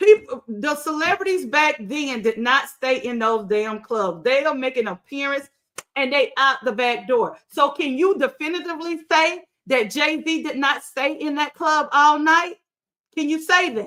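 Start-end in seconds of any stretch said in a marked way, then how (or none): 7.5-13.9 fired-up, heated, insistent tone. Tired of it, addressing listeners directly, yelling. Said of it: "I'm sorry I'm yelling".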